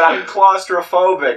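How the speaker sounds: very loud, shrill, high-pitched shout. Retelling telling someone in a mosh pit about claustrophobia: retelling a shout. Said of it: "I'm shouting this over a sea of sweaty teenagers".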